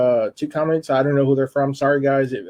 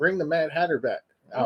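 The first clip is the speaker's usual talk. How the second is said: ordinary delivery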